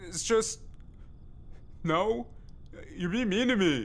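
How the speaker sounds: crying while talking, tearful voice. Answering someone who insults them, crying while talking. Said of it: "Are you crying?".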